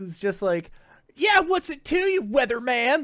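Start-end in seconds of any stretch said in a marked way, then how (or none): 1.1-3.0 put-on very high, rude, offhand little bully kid voice. Voicing the redheaded kid from A Christmas Story, rude towards a weatherman: Scut Farkus voice. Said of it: "the redheaded kid, uh, from A Christmas Story".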